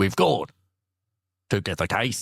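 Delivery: words broken up by big theatrical pauses. Doing a Boston accent when asked to add William Shatner dramatic pauses. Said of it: "add in a couple sort of William Shatner dramatic pauses".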